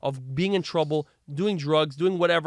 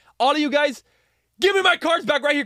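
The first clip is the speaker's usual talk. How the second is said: put-on furious shouting, higher and louder; 11 semitones higher, 7 dB louder than usual. Retelling confronting three guys stealing cards: retelling his own furious yelling. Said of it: "And I went nuts".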